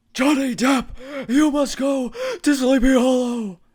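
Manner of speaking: very loud, very high, slow, drawn-out booming voice. Repeating the other's film line as an impression: Christopher Lloyd impression. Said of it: "Is that your Christopher Lloyd impression?".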